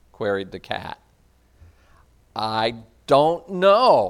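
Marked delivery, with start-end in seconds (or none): 2.4-4.1 stammering, stuttering, much slower. Reading Alice in Wonderland aloud, the confused girl answers the cat, stammering. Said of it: "stammered Alice".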